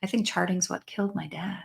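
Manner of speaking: low, quick, hushed voice. Retelling what a woman said on a call after hearing about the trainings, in a low voice. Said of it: "she says in this low voice".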